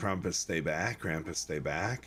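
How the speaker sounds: usual speaking voice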